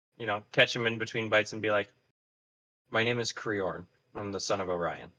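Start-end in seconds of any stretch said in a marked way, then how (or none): 2.9-5.0 low voice, quieter and slower. A player's character sits beside someone mid-meal and gives a name, in a low voice. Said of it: "in a low voice".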